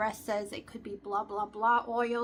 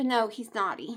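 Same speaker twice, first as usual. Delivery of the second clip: normal talking voice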